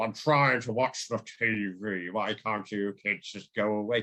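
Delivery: put-on drawn-out American southern drawl. Retelling a film scene where the father tells the kids off: imitating a southern drawl. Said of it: "he's talking in a southern drawl".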